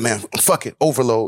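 ordinary delivery

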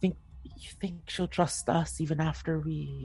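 imitated whisper. Recounting a story where one character leans close to another, retelling a whisper. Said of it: "whispers like".

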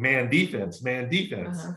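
normal talking voice

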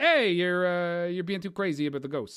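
casual put-on Brooklyn accent, New York style. Recalling a scene from a ghost show, speaking to the wife in a Brooklyn accent. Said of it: "I did it with like a Brooklyn accent".

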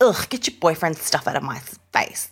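put-on play-acted scornful, dismissive bratty teen tone. Imitating Nicolette as a bratty teen: imitating Nicolette's bratty disdain. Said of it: "almost like a bratty teen".

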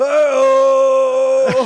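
loud, high, long drawn-out belted yell. Retelling a friend's party costume bit: imitating a friend's Hacksaw Jim Duggan yell. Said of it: "just would randomly go".

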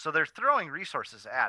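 ordinary talk

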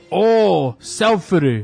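put-on English spoken with a Japanese accent. Retelling how the volunteer guide in Nara answered a photo request, Japanese accent. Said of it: "falou com o sotaque japonês".

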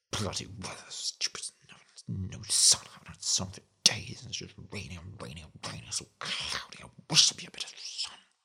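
breathy, half-whispered, low, rushed grumbling mutter. Explaining the word grumble, the speaker demonstrates it: grumbling about the weather. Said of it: "if I grumbled about the weather, it might sound like this".

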